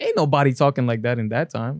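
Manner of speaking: plain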